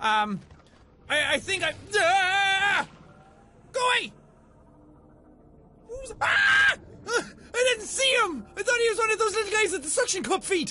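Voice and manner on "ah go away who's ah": high, loud, guttural, startled primal scream. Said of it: "guttural primal scream".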